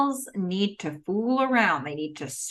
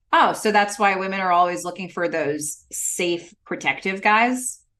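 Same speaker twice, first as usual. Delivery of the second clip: plain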